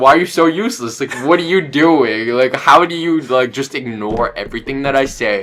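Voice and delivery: mock fed-up, exasperated ranting tone. Retelling scolding the AI at the end of the day: retelling angry scolding. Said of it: "talking some shit to Claude".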